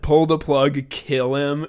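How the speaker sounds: put-on, vicious, seething, hate-filled voice. Retelling a scene where Tim snaps at a hospitalized man: imitating real hatred. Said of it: "real hatred in his voice".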